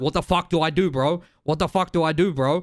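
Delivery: mock panicked, panicking voice, acted out. Describing a new player dying to the cocoon attack in Wilds; imitating a panicked new player. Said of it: "And you looking around panicking".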